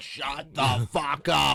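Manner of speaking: aggressive, loud voice. Recalling a friend's mom telling someone off, the speaker acts it out: mock-aggressive. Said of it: "She said it like aggressively".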